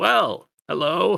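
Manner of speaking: high-pitched, small, rough croaking voice. Narrating a scene, voicing Igric the toad, in a croaking little voice. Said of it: "in a very croaking little voice".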